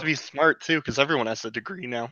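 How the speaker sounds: voice cracking. Talking with co-hosts about college degrees, voice cracking. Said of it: "I don't know why my voice is cracking".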